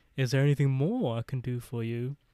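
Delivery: put-on English-sounding accent slipping in, seemingly unintended. Retelling what a man in a story said: accidental english accent. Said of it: "Not saying that I just did an English accent".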